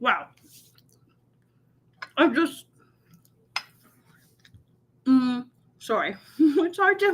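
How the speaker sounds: talking while chewing, mouth full. Trying to talk while still chewing a bite: talking with mouth full. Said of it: "it's really hard to talk and chew at the same time".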